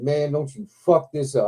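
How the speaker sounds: normal talking voice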